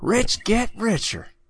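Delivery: cartoon robot voice, pitched high. Reacting to a headline, the speaker hears Bender in his head: Bender voice. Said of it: "I just hear Bender's voice in my head".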